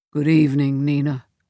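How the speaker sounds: low, throaty voice. Reading a story, voicing a husband greeting his wife on the phone: low and throaty. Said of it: "her husband's voice again, low and throaty".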